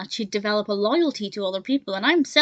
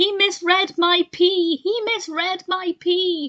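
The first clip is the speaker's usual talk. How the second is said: high, slow, drawn-out, deliberately bad cartoon shout; 8 semitones higher than usual. Recalling a moment the reviewer liked in the episode: terrible Homer shouting impression. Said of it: "That's a terrible impression".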